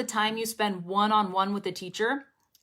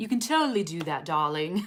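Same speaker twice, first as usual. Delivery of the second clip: bad, awful, fake put-on British accent; 4 semitones lower than usual. Showing how to play around with accents among friends: put-on british accent. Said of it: "pretend you're speaking in a British accent".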